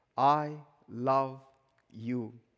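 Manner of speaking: mild, gentle, tender delivery. Recalling a voice heard at a train door: imitating the Lord's gentle voice. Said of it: "I heard a gentle voice from the Lord".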